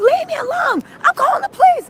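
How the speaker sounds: frantic, very high shrieking scream. Acting out what a man in the story screamed, retelling a man screaming. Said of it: "he starts screaming".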